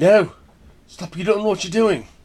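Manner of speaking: terrible put-on British accent. Retelling a doctor stopping people freeing chimps, in a terrible British accent. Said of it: "That was a terrible accent".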